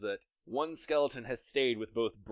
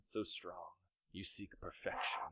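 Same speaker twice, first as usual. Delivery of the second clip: whispered character voice, much quieter; 4 semitones lower, 12 dB quieter than usual. A game master voices a presence whispering to a player's character in a dream death state, whispering voice in a dream. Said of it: "You hear him whispering".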